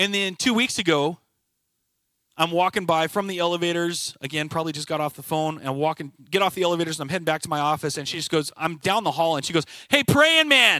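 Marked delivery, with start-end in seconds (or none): 9.9-10.8 high, loud, high-pitched yell. Retelling how a woman called out from down the hall, imitating someone yelling. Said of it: "She just yells at me".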